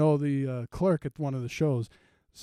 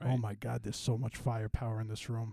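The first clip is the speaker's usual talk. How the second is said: anxious, nervous inner-thought voiceover; 4 semitones lower, 9 dB quieter than usual. Acting out a nervous first-timer's inner voiceover at the gun range: imitating Vinny's nervous inner thoughts. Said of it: "and he's all nervous".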